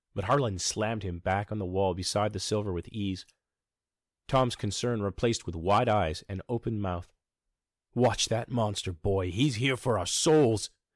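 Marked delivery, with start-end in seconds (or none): 8.0-10.7 frosty, icy, cold, chilling delivery. Reading a story, a man's warning to a boy: icy warning. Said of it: "Harlan warned in an icy tone".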